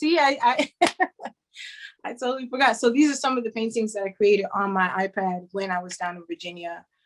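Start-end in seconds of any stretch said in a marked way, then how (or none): 0.0-2.8 flustered, nervous laughing while talking, higher. Presenting a class and losing track of what to show: nervous, laughing while talking. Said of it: "I'm so nervous".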